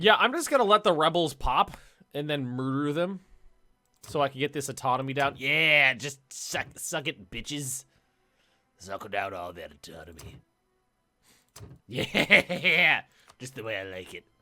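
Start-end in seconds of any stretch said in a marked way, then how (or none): 5.4-14.2 creepy, low, slow creeper delivery. Playing a game and talking about the rebels, in a creepy creeper voice. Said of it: "I'm doing that with creeper voice".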